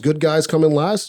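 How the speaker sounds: normal talking voice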